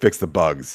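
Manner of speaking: sarcastic, pointed quip tone. Answering what they want in the next game update: sarcastic. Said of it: "I have a sarcastic response".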